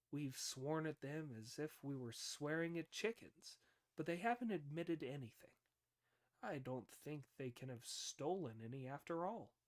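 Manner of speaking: usual speaking voice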